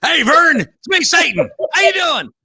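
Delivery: very high, loud hillbilly drawl. Picturing Satan dropping in on a man, speaking in a hillbilly Satan voice. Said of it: "Lucifer's not a hillbilly".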